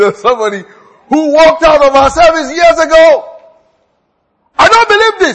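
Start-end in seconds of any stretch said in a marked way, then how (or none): 4.6-5.4 raised, high, angry outburst. A preacher retells a man who walked out of a service, retelling a raised voice. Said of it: "And he raised his voice".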